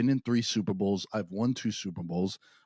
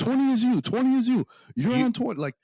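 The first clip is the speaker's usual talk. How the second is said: mock yelling, higher and louder; 7 dB louder than usual. Retelling a quarterback calling to a receiver: imitating someone yelling.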